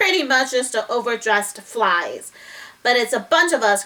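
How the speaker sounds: ordinary delivery, nothing marked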